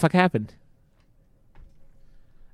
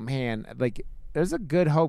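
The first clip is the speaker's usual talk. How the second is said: ordinary delivery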